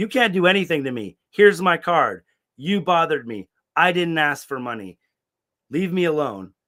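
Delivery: play-acted, fed-up, heated, high-pitched yelling. Recounting an argument with a man while in handcuffs, retelling own yelling. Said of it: "I was like yelling at him".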